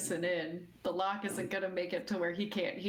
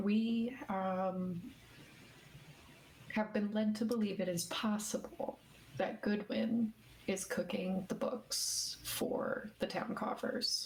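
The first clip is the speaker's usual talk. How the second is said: quiet, kept-down, slow hushed murmur. Role-play character stepping closer to confide in someone, in a lowered, hushed voice. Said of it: "walk a little bit closer and lower my voice".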